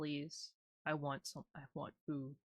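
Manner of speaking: desperate, pleading, begging pet creature voice. Voicing a pet begging for food: voicing a desperate pet, mock pleading. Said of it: "He's desperate".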